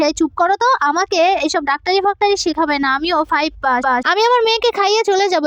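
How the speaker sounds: ordinary delivery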